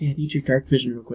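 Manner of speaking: hushed, in-character half-whisper stage whisper. Asking a party member for dark vision in a dark room: half-whispering in character. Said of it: "I whisper, I say".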